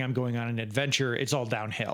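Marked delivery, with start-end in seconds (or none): none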